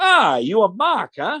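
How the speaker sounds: slow, high put-on Italian accent. Retelling a handshake with a man who gets his name wrong, imitated Italian accent. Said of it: "he says to me in his Italian accent".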